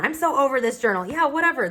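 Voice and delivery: over-it, done-with-it tone. Talking about an old journal, saying it in a fed-up tone. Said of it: "this tone".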